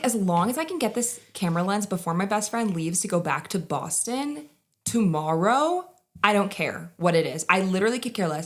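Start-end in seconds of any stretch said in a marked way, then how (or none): none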